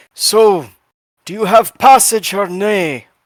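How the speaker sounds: brash, blunt, slow, unhurried delivery. Voicing a dwarf herald asking a smuggler about passage: brash, straightforward Bazbeer voice. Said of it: "Bazbeer is very brash and straightforward".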